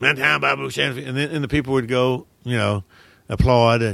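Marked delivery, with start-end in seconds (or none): 0.0-1.1 put-on Cajun accent. Retelling walking out on stage to deliver a movie line, in a cajun accent. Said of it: "Cajun accent".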